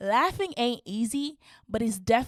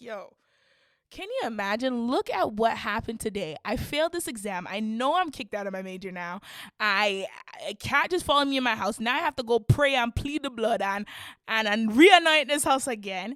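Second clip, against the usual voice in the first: ordinary talk, nothing marked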